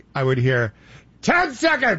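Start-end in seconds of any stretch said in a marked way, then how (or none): 1.3-2.0 full-voiced, very high-pitched call. Retelling how someone gave timing cues in the speaker's ear: retelling a full-voice cue. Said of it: "full voice".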